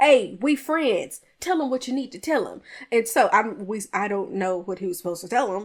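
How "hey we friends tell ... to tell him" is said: mock-upset, acting annoyed. Recounting a church board meeting, acting out a man's reply: retelling upset words. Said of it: "David Senior is getting upset and he's like".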